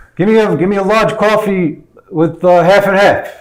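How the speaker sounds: loud, high shout. Retelling ordering coffee from a loud man, retelling own yelling. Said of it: "Suddenly, I'm yelling because he's yelling".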